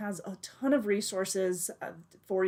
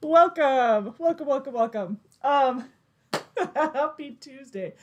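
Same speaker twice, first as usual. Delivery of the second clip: can't stop giggling while talking; 6 semitones higher, 7 dB louder than usual. Host opening the show's twenty-sixth edition, giggling while talking. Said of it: "I've got the giggles. I can't stop laughing".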